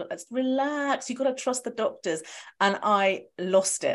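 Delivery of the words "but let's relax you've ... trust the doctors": patronizing, condescending know-better mansplaining, pitched up. Retelling a man's reply to the speaker's objection: mock mansplaining tone. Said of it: "mansplaining-y kind of way".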